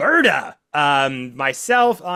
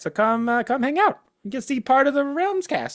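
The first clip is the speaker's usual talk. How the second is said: voice creeping up into high upper register; 7 semitones higher, 4 dB quieter than usual. Inviting listeners to Taylor's Tavern to see the Realms cast, voice gone high. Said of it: "Why did my voice get so high?".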